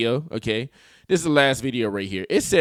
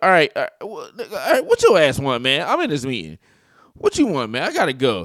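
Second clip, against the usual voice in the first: fully played tone of voice with swooping pitch. Acting out what he said to her, imitating his tone of voice. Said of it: "read the, his tone of his voice".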